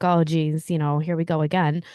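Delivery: ordinary delivery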